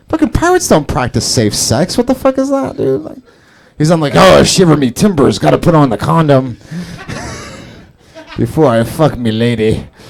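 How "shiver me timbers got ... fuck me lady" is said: horrible, lousy sea-dog pirate voice. Joking about pirates in a sex fantasy, doing a bad pirate voice. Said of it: "that's a horrible pirate impersonation".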